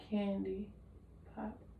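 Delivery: very soft, barely audible whisper. During a hearing check, the examiner whispers words for the patient to repeat. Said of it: "tell me what I whisper".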